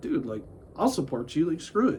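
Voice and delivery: ordinary talk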